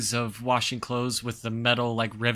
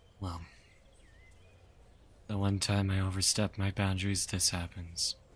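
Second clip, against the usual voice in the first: muttering under the breath, quieter and lower; 4 semitones lower, 8 dB quieter than usual. A narrator giving a character's remark after an old lady leaves, muttering under his breath. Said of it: "Kelnar says under his breath".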